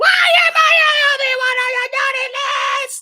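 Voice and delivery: very high, loud, panicked shriek. Recapping a cartoon episode, quoting the girl who freaks out, in Princess voice. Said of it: "yes, I did the voice again".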